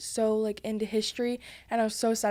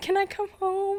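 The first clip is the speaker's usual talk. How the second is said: very high, acted-out tearful crying; 11 semitones higher than usual. Retelling calling mom every night on the trip: imitating own crying plea. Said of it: "I would literally call her crying".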